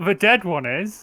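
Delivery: in-character calling out. Answering the enemies mid-fight in character: in-character shout. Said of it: "And I'll shout".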